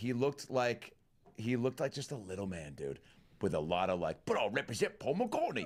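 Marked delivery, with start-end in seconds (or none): 4.3-5.7 put-on pitched-up London Cockney accent. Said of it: "And he was Cockney".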